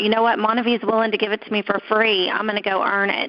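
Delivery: plain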